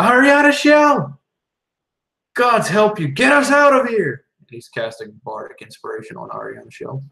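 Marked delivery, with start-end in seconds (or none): 0.0-4.2 very high, very loud top-of-the-lungs yell. A player's character calls out to another character to get them out, shouting at the top of his lungs. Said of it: "the top of his lungs".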